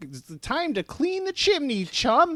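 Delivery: put-on very high, squeaky, poorly done Cockney accent. Describing a Meowth and Wobbuffet episode to a listener, in a bad Meowth chimney-sweep accent. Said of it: "a worse Chimbley sweep accent".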